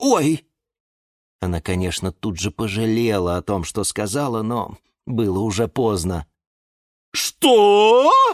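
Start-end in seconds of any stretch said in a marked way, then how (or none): 7.1-8.1 startled, loud, high shout, word stretched long. Reading a story, a character reacts to what another has just said: shouted. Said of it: "закричал Жорж".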